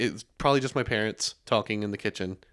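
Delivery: normal talking voice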